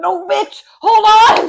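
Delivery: drawn-out, very loud, high, freaked-out shout. Retelling a friend letting go of the ride harness: retelling panicked yelling. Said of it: "freaking out".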